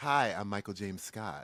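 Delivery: very low, soft radio-host voice. Redoing the introduction to match the other speaker, the speaker uses a Delilah radio voice. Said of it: "I need to match you".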